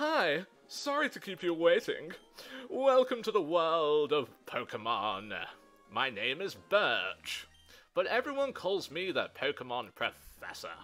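loud, projected, sing-song delivery. Voice-acting the Pokemon intro for ladies and gentlemen: voicing Professor Birch. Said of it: "Let's do some voice acting".

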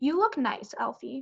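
very proud voice. A mother to her son in his costume, very proud voice. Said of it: "Mom said in a very proud voice".

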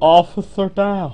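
sad delivery. A player whose game character is dying makes the callout, said sadly. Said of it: "but I say it so sad".

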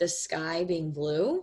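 slow, drawn-out, questioning rise at the end.

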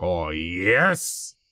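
low funny voice with yes stretched out. Doing a voice because a viewer redeemed it: Wario voice. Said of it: "do the voice".

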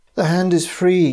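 high, groaning lament, sounding defeated. Reading a story, a character sinks onto a bed: groaned. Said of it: "groaned Sir Henry".

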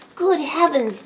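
high words caught on a sharp gasp. Narrator reading a character's reaction as a parrot takes off, gasping. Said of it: "gasped Miss Cherry".

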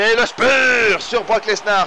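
high, loud, drawn-out hype.

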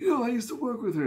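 fake elderly voice, very high-pitched. Telling a story dramatically, playing herself as older: put-on old voice. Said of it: "I have to have an old voice, right?".

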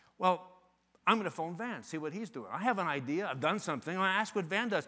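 plain

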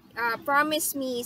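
ordinary talk, nothing marked

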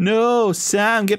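ordinary delivery, nothing marked

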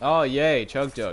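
loud, sarcastic, very slowly drawn out. Playing a game and picking up a chug jug: sarcastic. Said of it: "I said that sarcastic and all".

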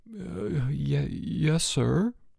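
quiet stammering. The headmaster shows George items that belong to him; George answers, stammering. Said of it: "George stammered".

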